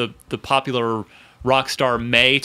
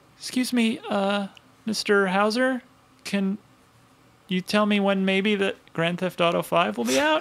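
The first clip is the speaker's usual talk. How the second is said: acted courteous, deferential voice, pitched up, polite; 7 semitones higher, 4 dB quieter than usual. Acting out the publisher calling the studio: imitating a polite caller. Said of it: "two K calls politely".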